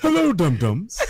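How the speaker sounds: put-on cartoon alien voice. Asking why this dude got the Gazoo voice, then doing the Gazoo voice. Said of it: "the Gazoo voice from Fred Flintstone".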